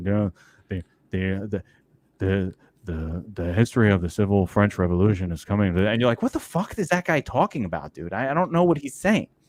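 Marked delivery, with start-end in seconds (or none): 0.0-5.8 flat, droning, very low monotone. Imitating a professor nobody understands, in a flat monotone. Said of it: "he speaks in a monotone".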